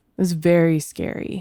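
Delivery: choked-up voice breaking and catching with emotion. Telling of a scary time with a new daughter, choking up. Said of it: "I'm choking up".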